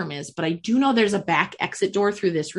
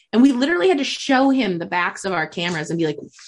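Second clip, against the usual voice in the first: ordinary talk, nothing marked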